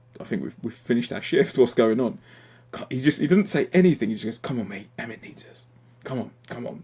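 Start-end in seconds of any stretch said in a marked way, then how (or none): 4.4-6.8 play-acted, very quiet, hushed and calm. Recounting being called back after finishing a shift, the speaker quotes him: imitating a really calm voice. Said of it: "In this really calm manner".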